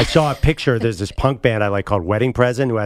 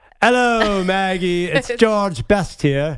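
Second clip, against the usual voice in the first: high-pitched, slow, bad British accent laid on thick; 9 semitones higher than usual. Dressed as George Best in short shorts, bad British accent as George Best. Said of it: "do your bad British accent again?".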